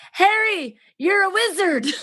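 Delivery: horrible character voice, very high and loud. Retelling the moment the boy learns he's a wizard: Hagrid impression. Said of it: "That's my Hagrid impression".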